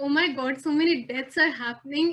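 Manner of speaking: normal talking voice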